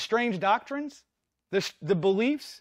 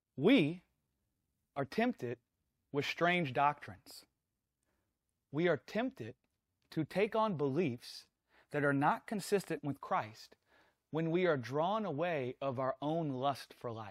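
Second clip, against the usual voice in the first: slow, halting, soft, word-by-word delivery; 8 semitones lower, 8 dB quieter than usual. Explaining a scripture to listeners he calls guys, said slowly. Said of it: "I'm going to try and say this slow".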